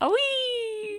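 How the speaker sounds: squeaked way up high, with "wee" stretched out. Asking whether the impression is the high one: high-pitched Yoshi voice. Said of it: "goes really high pitched".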